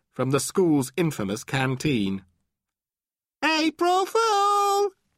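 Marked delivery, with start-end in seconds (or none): 3.5-4.9 very high, full-throated, top-of-the-lungs shout. Narrator reading Lucy's line to Danny, shouting at the top of her voice. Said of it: "shouted Lucy at the top of her voice".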